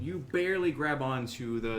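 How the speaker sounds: ordinary delivery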